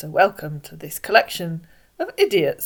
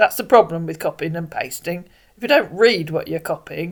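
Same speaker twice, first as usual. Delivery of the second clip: ordinary delivery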